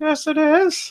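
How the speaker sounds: put-on timid, meek little voice, very high. Retelling answering a phone call asking for him: retelling own meek reply. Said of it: "in my meek voice".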